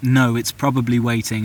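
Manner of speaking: normal talking voice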